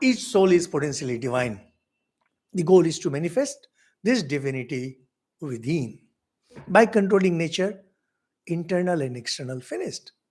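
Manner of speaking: usual speaking voice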